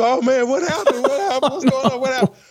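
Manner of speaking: high-pitched fake sobbing through the words. Retelling how he joined a grieving friend: retelling own fake crying. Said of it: "I started literally fake crying too".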